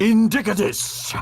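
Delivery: put-on, high-pitched ogre voice. Narrating a scene, the speaker voices an ogre crouched in a kitchen: ogre voice. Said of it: "And the ogre turns".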